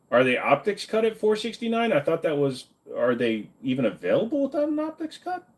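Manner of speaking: high, straining, swooping, climbing, animated voice. Asking about optics cuts on a rifle, voice going high. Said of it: "Why is my voice going so high?".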